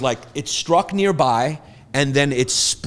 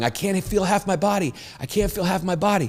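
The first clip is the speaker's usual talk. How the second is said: high, put-on crying voice of a sobbing child; 5 semitones higher, 6 dB quieter than usual. Retelling a kid's words after a lightning strike: imitating Dante crying. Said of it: "was just crying, going".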